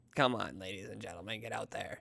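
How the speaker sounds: very deep, low, hushed, creepy put-on voice. Urging listeners to go to an event with fire truck rides, in a put-on scary voice. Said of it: "I don't know why I used that voice".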